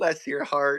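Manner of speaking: mock sweet tone, said smiling. Imitating an older Southern lady saying it: imitating a remark said with a smile. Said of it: "they say it with a smile too".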